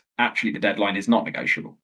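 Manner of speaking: ordinary talk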